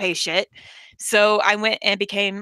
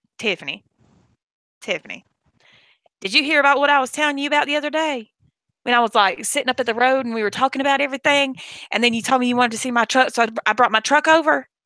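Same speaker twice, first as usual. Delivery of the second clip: put-on twangy Georgia Southern accent on every word; 3 semitones higher than usual. Showing how a sister talks: imitating sister's twangy Southern accent. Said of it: "this is how my sister talks".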